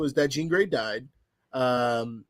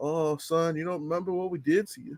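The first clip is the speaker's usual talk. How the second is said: put-on Southern US accent; 3 semitones higher, 4 dB quieter than usual. Quoting a movie villain's line: imitating a southern accent. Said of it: "His southern accent was kinda funny".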